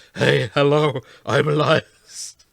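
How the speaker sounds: fake rough gravelly voice. Imitating a voice actor introducing himself: gravelly Elias Toufexis voice. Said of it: "that's too gravelly for me".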